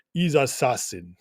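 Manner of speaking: low, terrible, bad fake Russian accent. Reading out what a consul's girlfriend repeated, try a terrible fake russian accent. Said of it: "Should I say it in a Russian voice?".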